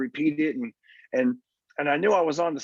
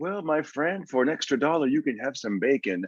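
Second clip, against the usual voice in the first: put-on smooth, suave waiter voice. Retelling how a waiter upsold a burger, imitating a smooth waiter. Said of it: "had a really smooth type of vibe".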